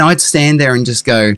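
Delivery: normal talking voice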